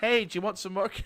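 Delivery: put-on loud, high, overly friendly waiter voice. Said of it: "and it's like".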